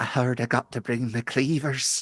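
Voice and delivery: character voice, slow, drawn out and deliberate. Voicing a tall hyena creature greeting a player: voicing Honey the gnoll cook. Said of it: "she looks up at you and she goes".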